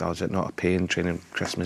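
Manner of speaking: ordinary delivery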